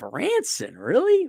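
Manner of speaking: incredulous, disbelieving tone.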